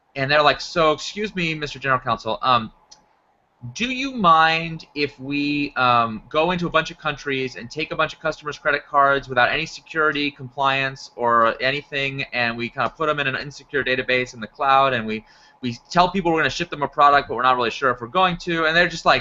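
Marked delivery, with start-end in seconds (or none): none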